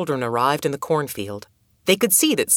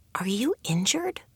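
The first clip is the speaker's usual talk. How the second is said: soft voice with pitch rising up; 6 semitones higher, 7 dB quieter than usual. A girl approaches an injured crow and asks it a question, softly. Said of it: "Adoet asked the bird softly".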